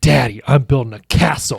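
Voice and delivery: put-on excited child voice. Retelling a son's words when found building at bedtime: imitating a child's excitement. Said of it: "he's so excited".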